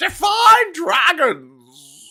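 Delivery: very high, swooping delivery, last word drawn out. Retelling a reply to a question about dragons: Jordan Peterson voice. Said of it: "He went".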